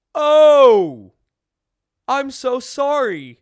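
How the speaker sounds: very high, very loud, drawn-out yawn on oh. Speaker telling a childhood story breaks off to apologize, yawning. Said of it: "I don't know why I'm yawning".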